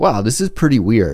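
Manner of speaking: plain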